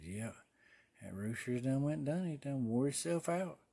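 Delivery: soft muttering under the breath, as if to oneself. Retelling what an old man said on the farm: imitating muttering under breath. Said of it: "muttered under his breath".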